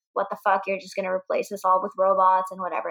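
pissed-off, angry, indignant tirade. Retelling how a character confronted the boss: imitating an angry outburst. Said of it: "gets all pissed off and goes to the boss and is like".

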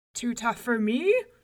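loud, hard shout. Una asks Coccolin if Finn's bread is too tough; he answers, shouting. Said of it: "shouted Coccolin".

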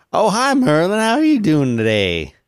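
comic put-on country-folk voice, swooping and high-pitched. Greeting another speaker on a call: funny rural voice. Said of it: "when you were doing that funny rural voice".

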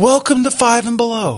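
put-on, high-pitched, yelled shouting. Retelling how store staff greeted customers: imitating staff yelling a greeting. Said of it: "everybody behind the counter yelled at me".

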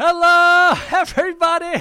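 very high, very loud, over-excited host voice. Podcast host, teased about getting excited, greets everybody super excited. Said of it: "getting super excited".

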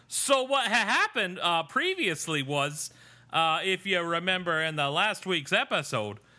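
high-pitched mock Canadian accent. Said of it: "the problem with doing a voice".

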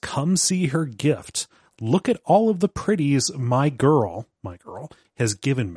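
acted, slightly off-kilter, unhinged talk. Retelling a scene where a woman speaks, not sweet: imitating unhinged talk. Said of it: "talking a little bit unhinged and says".

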